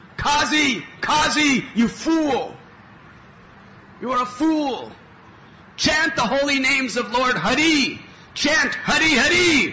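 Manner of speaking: wild, very high, tumultuous shouted scream. Telling how a man ran into the feared qazi's house at night, retelling a tumultuous scream. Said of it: "screamed out in a tumultuous voice".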